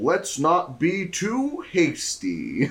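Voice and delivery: very slow, stiff, wooden cold reading. Quoting an actor's line from the movie: imitating a flat first-read line delivery. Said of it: "like you're reading a line for the first time".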